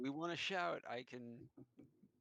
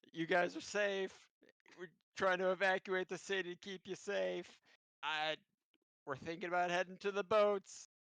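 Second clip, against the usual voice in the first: loud, amplified yelling. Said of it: "increase the sound of my voice".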